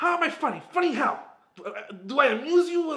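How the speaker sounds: shrill, loud delivery, deliberately badly done. Quoting a favorite movie line: terrible Joe Pesci impersonation. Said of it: "that's my terrible Joe Pesci impersonation".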